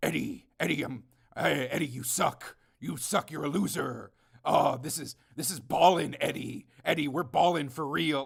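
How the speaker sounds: low, goopy movie-monster creature voice. Retelling dumb lines from a film in a goopy Venom voice. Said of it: "in the goopy Venom voice".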